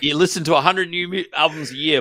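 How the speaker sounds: high, loud mock British lord voice.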